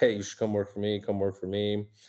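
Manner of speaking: ordinary delivery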